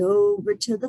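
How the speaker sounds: plain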